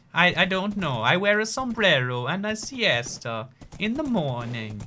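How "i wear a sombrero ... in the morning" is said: put-on Italian-style accent. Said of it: "this is my accent".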